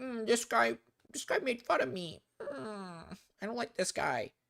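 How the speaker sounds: put-on high, soft whining like a little baby. Mocking someone who complained about being made fun of: imitating Brandon whining like a crybaby. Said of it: "crying like a little baby".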